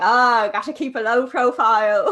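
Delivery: loud, horribly done put-on Irish brogue. Retelling someone's reply to their dm, in a horrible irish accent. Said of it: "That was a horrible Irish accent".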